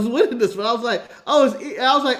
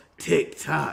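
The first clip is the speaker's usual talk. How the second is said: put-on smooth flirty wrestler voice, lower and quieter; 8 semitones lower, 7 dB quieter than usual. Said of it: "What the Big Valboski says".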